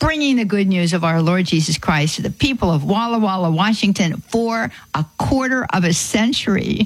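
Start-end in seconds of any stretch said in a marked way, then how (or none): none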